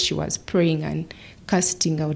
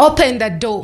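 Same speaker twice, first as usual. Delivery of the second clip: louder screamed voice. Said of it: "he kept screaming".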